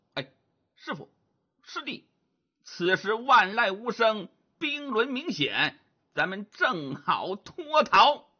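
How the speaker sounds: ordinary delivery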